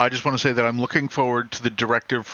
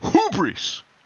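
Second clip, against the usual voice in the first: punchy, forceful first syllable hu- in hubris. Showing how to pronounce a word properly: forceful first syllable of hubris. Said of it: "you have to really put some oomph into that first syllable".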